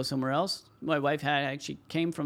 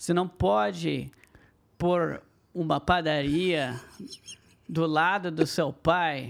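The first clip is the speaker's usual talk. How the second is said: Brazilian Portuguese pronunciation; 4 dB louder than usual. After the Brazilian accent is chosen, speaker demonstrates a phrase, Brazilian Portuguese accent. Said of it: "Do it in the Brazilian accent".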